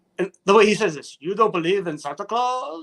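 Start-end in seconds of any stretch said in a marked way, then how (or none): 1.2-2.9 eerie, creepy, put-on vampire voice. Mocking the way a man spoke when he should have been soothing kids, talking like a vampire. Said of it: "talking like vampire".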